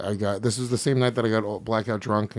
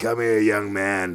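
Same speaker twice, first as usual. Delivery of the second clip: put-on heavy smoker's voice; 4 dB louder than usual. Retelling meeting an old lady who smoked two packs a day: imitating a heavy smoker's voice. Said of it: "she had a voice like".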